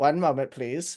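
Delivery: mechanical, robotic voice. Voicing a gargoyle that speaks after the code: mechanical voice. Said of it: "in a mechanical voice".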